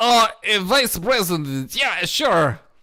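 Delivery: put-on, fake Japanese accent. Playing a character in an improv bit: put-on japanese accent.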